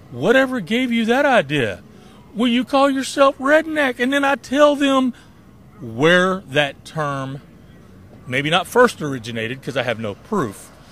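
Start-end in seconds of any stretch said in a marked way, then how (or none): 0.1-3.9 put-on sarcastic tone, pitched very high. Asked by people if they are racist, the speaker retells their own sarcastic reply. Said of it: "sarcastic as I am".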